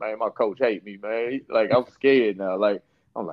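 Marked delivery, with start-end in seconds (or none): 0.0-1.3 mock words wept out, tearful crying lament. Retelling a phone call after being scolded by a coach: imitating own past crying. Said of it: "I'm crying like".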